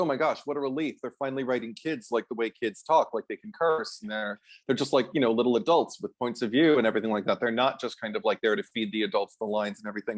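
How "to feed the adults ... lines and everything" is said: ordinary talk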